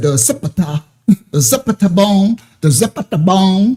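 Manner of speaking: put-on slow, deliberate country-accent reading. Mocking how Ben Crump read the autopsy: imitating Ben Crump's country accent. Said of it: "he got a country accent".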